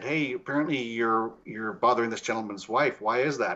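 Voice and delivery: ordinary talk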